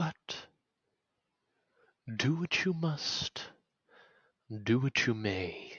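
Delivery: mysterious, eerie, dreamlike voice. Voicing the voice from the dream, speaking behind the player: mysterious dream voice. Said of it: "The voice goes".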